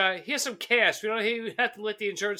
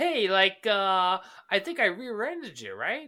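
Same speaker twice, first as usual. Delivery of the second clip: put-on valley girl voice. Retelling a movie scene, imitating a valley girl: imitating a valley girl. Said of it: "a fucking valley girl".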